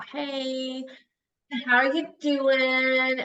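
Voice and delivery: bored, very slow, flat monotone. Showing how a bored caller sounds on the phone, bored voice. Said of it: "Like you just sound bored to me".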